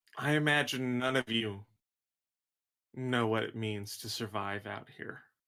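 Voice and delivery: composed, calm, careful, articulate speech. A player's character looks up from the ground and speaks to the group: calm and articulate. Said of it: "He gets a very mad look on his face. / I didn't think this would be the deal I made, but I made it. I will help with whatever plan you make. / and he got really articulate and he got really calm".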